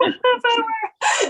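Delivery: imitated sobbing voice.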